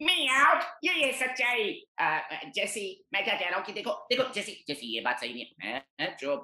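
very high, nasal cartoon voice, through the nose. Speaker demonstrating the voice he used for a character: nasal Meowth voice. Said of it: "it was like a nasal voice that I went into".

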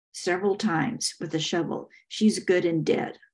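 ordinary delivery

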